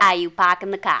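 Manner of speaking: Eastern New England accent. Given a test phrase for a regional accent, Eastern New England accent. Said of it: "Eastern New England".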